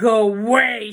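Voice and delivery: growled, loud. A narrator reads a girl staring into the wolf's eyes: growling. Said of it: "she growled".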